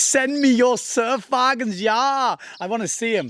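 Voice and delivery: bad, terrible, fake put-on German accent. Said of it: "That's a terrible accent".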